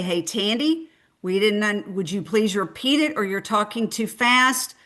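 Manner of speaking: ordinary talk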